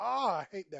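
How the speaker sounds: frustrated yell at full volume, pitched high. Reacting to something on screen while working, yelling in frustration. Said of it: "Excuse me for yelling".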